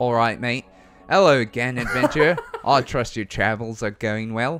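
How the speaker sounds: loud put-on Australian accent, edging toward New Zealand. Voicing a character who greets the adventurer, in an Australian accent. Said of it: "hit him with your Australian accent".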